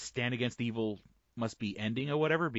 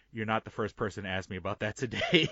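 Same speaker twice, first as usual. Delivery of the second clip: imitated serious tone. Retelling a comedy writer's reply at Comic-Con, imitating a serious tone. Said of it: "he kinda gets real serious".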